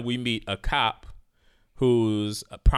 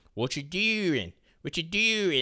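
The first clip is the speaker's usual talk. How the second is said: put-on pitched-up Baltimore accent; 6 semitones higher, 3 dB quieter than usual. Describing a scene, a speaker imitates Mouse talking to the new girl, in a Baltimore accent. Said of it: "we really hear Mouse Baltimore accent".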